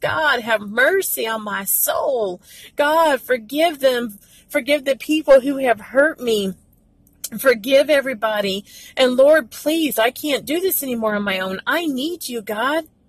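pleading, crying-out, prayer-like voice. Showing listeners how to cry out to Jesus in prayer: crying out to God. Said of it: "Cry out to Jesus".

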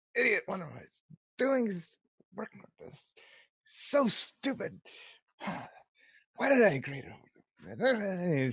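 angry grumbling under breath. A woman complains to herself about a job she agreed to; muttering under breath. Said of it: "muttering under her breath".

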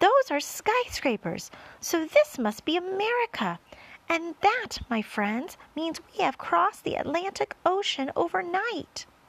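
thrilled, bursting, excited, high-pitched delivery. James speaks to his friends, jumping up and down, excited. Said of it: "jumping up and down with excitement".

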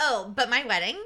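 put-on valley girl accent. Imitating an annoying person in conversation, a speaker slips into a valley girl voice. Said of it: "you have turned into a valley girl".

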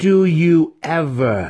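loud, high, snarled, growling. Reading a story aloud, the narrator voices the yokel's retort, growled. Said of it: "The yokel growled".

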